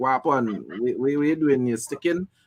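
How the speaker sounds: normal talking voice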